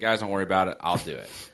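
ordinary talk

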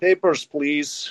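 bad fake Russian accent, muttered under the breath. Asked for vaccination proof at a restaurant, muttering to a friend in bad Russian accent. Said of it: "I sort of muttered under my breath in my bad Russian accent".

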